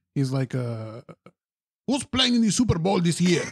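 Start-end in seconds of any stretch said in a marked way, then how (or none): 1.9-3.5 put-on thick, laid-on, heavy Mexican accent. Retelling a man's question, in a heavy Mexican accent. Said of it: "He says it in a heavy Mexican accent".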